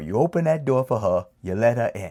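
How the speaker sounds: light, put-on Italian accent. Speaker retells advice given before lending a car for a date, in a little italian accent. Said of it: "excuse me for my little Italian accent".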